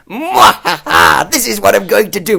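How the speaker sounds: loud, cackling, over-the-top villain gloat. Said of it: "'Cause imagine he went".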